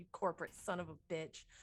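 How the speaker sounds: very quiet, low, hushed under-the-breath mutter. Rushing down the airlock in character, cursing: muttering under breath. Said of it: "I mutter that under my breath".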